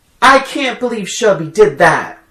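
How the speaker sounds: put-on high yell. Retelling a movie scene where a character yells across a room: imitating a character yelling. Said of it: "she yells out to Malin".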